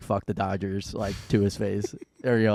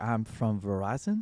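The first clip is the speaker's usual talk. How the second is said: put-on thick French accent; 7 dB quieter than usual. Retelling what a caller from Verizon said, in a very thick French accent. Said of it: "very thick French accent".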